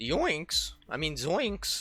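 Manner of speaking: high voice cracking upward. Speaker says the only voice they can do, then does Shaggy voice with voice crack. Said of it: "The only voice I can do is crack my voice".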